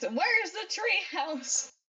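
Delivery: high, acted-out, calling-out yell. Retelling how a woman yelled into the woods, imitating her yelling. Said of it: "yells into the woods".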